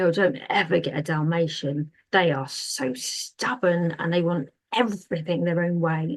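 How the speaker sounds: bitter, spiteful, venomous, vitriolic griping. Retelling what a man at a psychic fair said, imitating a vitriolic tone. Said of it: "that vitriol behind the words".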